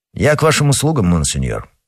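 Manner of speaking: ordinary delivery, nothing marked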